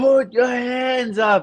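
loud drawn high yelling.

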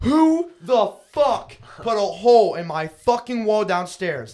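mock livid screaming, very high, loud, drawn out. Retelling the time they kicked everyone out of the house, re-enacting a furious yell. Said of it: "I was fucking livid".

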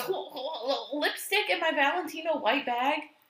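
mock very slow, high, halting, stammering disbelief. Retelling how she reacted to the spilled lipstick: imitating her stammering disbelief. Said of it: "And she goes".

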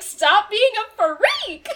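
very loud, high, swooping yell swinging up high. Retelling a manga scene, quoting Yuki: Yuki's exact tone of voice. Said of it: "he says it in that exact tone of voice".

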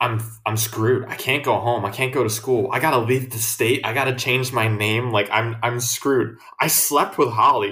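ordinary talk

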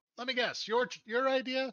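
very high, shrill shrieked-out line. Voicing a chiss who was just hit but not hurt: shrieking. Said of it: "and she shrieks out".

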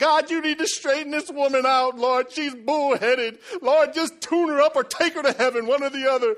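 put-on very loud, high, baby-like whiny pleading. Retelling crying out to god about a woman he clashed with, retelling whining like a baby. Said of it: "whining like a baby".

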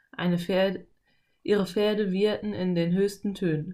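plain

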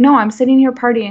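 mock irritated, angry, dismissive tone. Retelling a refusal to go to the bathroom: imitating Dustin's angry reply. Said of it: "he actually got really mad".

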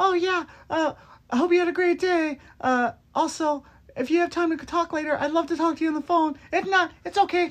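put-on squeaky, girlish, very high little-girl voice. Describing how they acted with someone they started liking: acting like a little girl. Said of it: "I became this little girl like".

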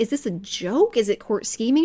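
ordinary talk, nothing marked

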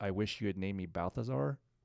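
normal talking voice

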